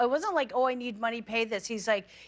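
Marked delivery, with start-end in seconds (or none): none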